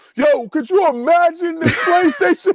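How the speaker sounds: play-acted, very high, called-out shout. Imagining a neighbor who got your console yelling from his window: imitating someone yelling out. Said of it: "he yells out from his window".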